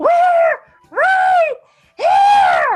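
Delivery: booming, amplified shout. Answering from the temple with a thaumaturgy-boosted voice: magically amplified shout.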